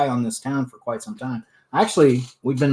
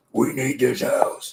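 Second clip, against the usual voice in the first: possessed, demon-like delivery. Quoting exactly how Denise said it, in a demonic voice. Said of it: "I'm calling demon".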